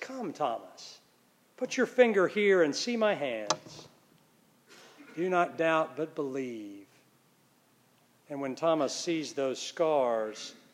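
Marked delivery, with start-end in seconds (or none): 0.0-6.8 mock gentle, kind, soft, low voice. Retelling how he shows thomas his scars, the speaker quotes him: retelling in a kind voice. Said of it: "saying in a kind voice".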